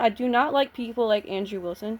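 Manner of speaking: usual speaking voice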